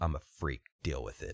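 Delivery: mock flat, very low deadpan delivery. Retelling a reply to a coworker at a hot tub: imitating own deadpan reply. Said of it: "I looked at him deadpan".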